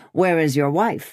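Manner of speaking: ordinary delivery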